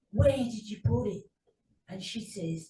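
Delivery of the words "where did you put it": furtive, conspiratorial, plotting tone. Retelling overheard words to a detective: imitating Lee Wortley saying it very quietly. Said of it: "he says very quietly".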